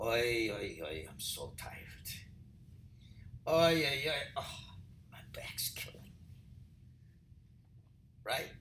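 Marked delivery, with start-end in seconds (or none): 0.0-6.1 soft, breathy, whispered, weary groaning. Showing how people wake up in the morning: imitating a tired morning groan. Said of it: "You go like this".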